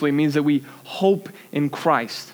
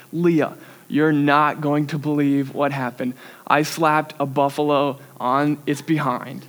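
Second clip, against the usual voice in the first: ordinary delivery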